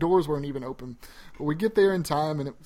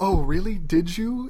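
very slow, mocking, sarcastic drawl; 3 semitones higher, 4 dB louder than usual. Retelling how the girls reacted when he said he got it, mimicking sarcastic girls. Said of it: "the girls were being sarcastic".

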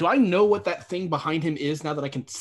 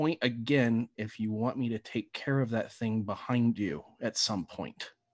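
soft, hushed half-whisper under the breath; 6 semitones lower, 6 dB quieter than usual. Voicing a character who keeps half-whispering to the others: half-whispering. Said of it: "continue to whisper and say".

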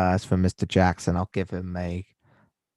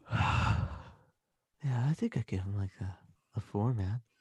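tired and stoned-sounding, very soft voice. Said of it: "I could just sound tired and stoned".

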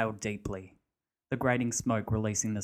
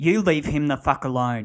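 very loud, high, piercing screech; 5 semitones higher, 10 dB louder than usual. Narrator voicing a character confronting another man after a killing: shrieking. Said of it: "Barry shrieked".

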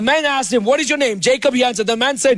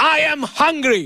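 put-on stubborn child, flat-out insistent and firm; 4 semitones higher than usual. Retelling how a hungry son insists: imitating son putting his foot down. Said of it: "he puts his foot down".

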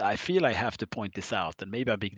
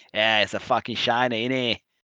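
mock Australian accent, slower; 2 semitones higher, 5 dB louder than usual. Speaker acting out a line in a joke story, Australian accent impression. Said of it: "flawless impression".

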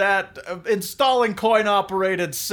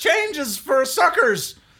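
put-on pitched-up squeaky teenager voice; 6 semitones higher than usual. The game master voices a teen in a booing crowd, squeaky teen voice. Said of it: "That was the squeaky voice teen".

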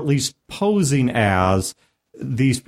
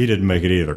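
cold, fully in-character delivery; 6 semitones lower than usual. Retelling a player's in-character line: imitating Brodor's cold in-character voice. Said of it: "in his in-character voice goes".

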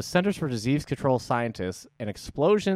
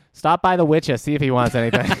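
loud, put-on Boston accent; 7 dB louder than usual. Later apologizing to people with real ones, spoken in a put-on boston accent. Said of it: "This has been [name]'s Boston accent".

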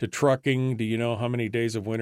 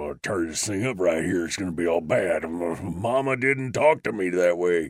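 put-on angry character voice, lower pitch; 4 semitones lower than usual. Asked to sound angry, doing a Sling Blade impression. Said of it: "that's more of the sling blade".

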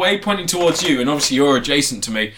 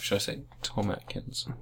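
mock-seductive voice, much quieter; 9 semitones lower, 16 dB quieter than usual. Giving their fullest possible recommendation to a co-host: mock-seductive voice. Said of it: "Did I say that seductively enough?".

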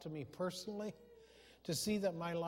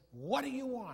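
curt, brusque, rough voice, pitched up; 6 semitones higher, 3 dB louder than usual. Retelling a story, speaker quotes the answer given to Joseph in a put-on brusque, rough voice. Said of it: "Said with a very brusque, kind of a rough voice".

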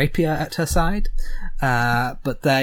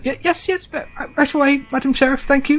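small goblin character voice, much higher; 13 semitones higher, 4 dB louder than usual. Game narrator voicing a goblin answering madam sheriff: little goblin voice. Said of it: "you hear the voice of the little goblin say".

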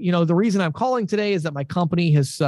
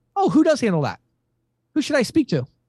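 quick, brisk, pitched-up delivery with no dragging; 6 semitones higher than usual. Teaching a fast follow-up question: quick, no dragging. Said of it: "we're going to very quickly say".

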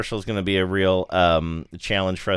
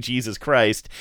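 normal talking voice

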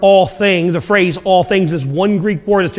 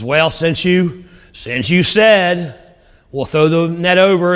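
mock, slow, sarcastic, point-proving tone. Retelling Peter answering Jesus after fishing all night: imitating Peter's sarcastic reply. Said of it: "He kinda says it sarcastically".

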